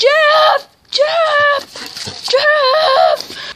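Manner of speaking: very high, swooping, furious angry shouting. Calling for Jeff after falling off a scooter: angry Bowser shouting. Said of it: "You seem, um, kinda angry".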